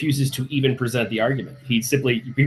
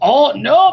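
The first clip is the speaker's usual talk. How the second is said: seething, fed-up outburst, loud and high, fuming; 12 semitones higher, 6 dB louder than usual. Retelling how a moderator reacted: imitating someone fuming. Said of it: "You can hear him fuming like".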